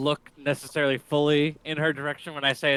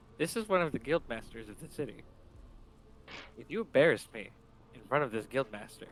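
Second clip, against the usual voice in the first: hushed whisper; 9 dB quieter than usual. Sliding up next to Orca to speak in her ear, whispering. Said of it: "I just whisper in her ear".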